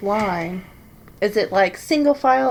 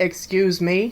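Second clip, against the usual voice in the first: put-on deep, low manly voice; 2 semitones lower than usual. Someone says a short line aloud in a deep man voice. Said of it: "I say in a deep man voice".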